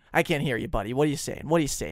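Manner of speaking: put-on fast New York accent with dismissive tone. Retelling a man brushing off his request on the phone: imitating a New York accent. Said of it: "Like in his New York accent".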